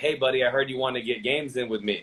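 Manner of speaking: ordinary delivery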